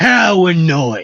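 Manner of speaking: loud, high-pitched pirate-sounding voice. Trying out a trigger word to get into character: pirate-sounding voice. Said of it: "that sounds more like a pirate".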